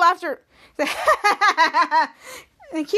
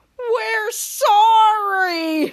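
slow-motion shout, drawn out; 4 semitones higher, 3 dB louder than usual. Telling a story, a character calls out during a fall, slow-motion shout. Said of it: "To shout out in slow motion said".

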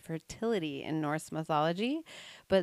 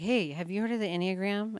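put-on whisper, higher; 3 semitones higher than usual. Retelling how people asked about the enneagram: imitating people whispering. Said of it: "I had people whispering".

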